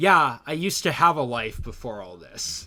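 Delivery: combative, aggressive, forceful delivery. Describing how he says his line, imitating an aggressive delivery. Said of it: "He says it in like an aggressively like".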